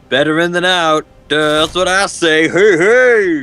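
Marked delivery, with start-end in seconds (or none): 2.5-3.4 cartoon voice, each hey drawn out. Doing an impression for the others, who react to it: Banjo-Kazooie impression. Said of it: "It's my Banjo and Kazooie impression".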